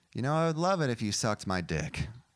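ordinary talk

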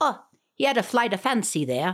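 terrible Irish-Scottish accent in a commentator voice.

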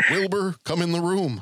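talking-horse voice. Showing that someone sounds exactly like Mr. Ed, Mr. Ed impression. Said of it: "I think he sounds exactly like Mr. Ed".

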